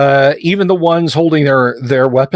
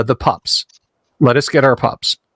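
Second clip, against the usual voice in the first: normal talking voice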